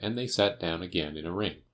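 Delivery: ordinary delivery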